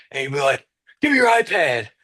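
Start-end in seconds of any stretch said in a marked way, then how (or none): 1.0-1.8 put-on very high, loud, angry, storming voice. Retelling how a coach came storming over: imitating a storming coach. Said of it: "come storming over".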